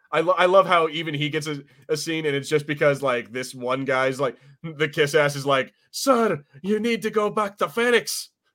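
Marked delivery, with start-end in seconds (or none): 5.9-8.2 bad Scottish accent, much higher. Recapping a scene, quoting the kiss-ass in a bad Scottish accent. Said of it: "I can't do a Scottish accent".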